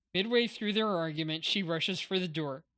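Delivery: ordinary delivery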